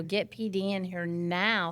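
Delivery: ordinary talk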